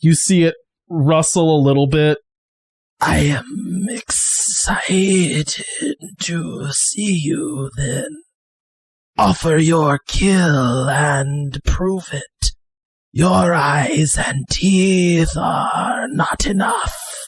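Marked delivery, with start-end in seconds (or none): 3.0-17.1 eerie whisper, dragged out very slowly, creature-like. Narrating a scene, the speaker voices a fanged thing answering, in a whispery voice. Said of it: "you hear a whispery voice come out".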